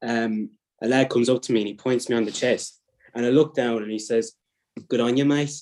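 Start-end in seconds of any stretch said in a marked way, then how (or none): 4.9-5.5 put-on Birmingham brummie accent. Retelling what a lad said to him in Tesco's: Brummie accent. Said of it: "that's my Brummie accent, by the way".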